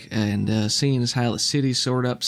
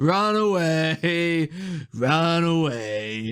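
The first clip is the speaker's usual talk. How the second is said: very slow, high, drawn-out laughing mockery; 5 semitones higher than usual. Voicing a man who laughs from above at a fleeing character: mocking laughing taunt. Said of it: "you just hear this laughter echoing".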